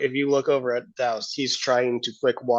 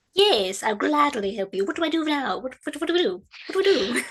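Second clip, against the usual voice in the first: very high, over-eager, too-keen voice; 13 semitones higher than usual. Offering to help make bread in character: over eager. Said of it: "a little over eager there".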